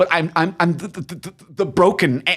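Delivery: put-on heavy stutter. Imitating an actor playing an android with a hammy heavy stutter. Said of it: "a heavy stutter".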